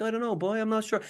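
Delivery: high, put-on young boy's voice. Recalling mimicking a boy in front of people at twelve, impression of another kid. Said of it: "I just did like an impression of him".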